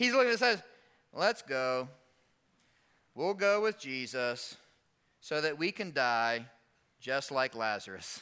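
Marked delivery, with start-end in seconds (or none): 1.1-8.2 slow, a little glum and heavy, gloomy delivery. Reading Thomas's words from the verse with a little Eeyore voice. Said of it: "I would read it with a little Eeyore in it".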